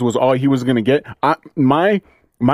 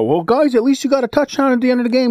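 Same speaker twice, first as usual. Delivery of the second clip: put-on stutter, pitched higher; 10 semitones higher than usual. Imitating what Nagy will say after the game: imitating Nagy stuttering. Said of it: "He's gonna stutter and do what Nagy does".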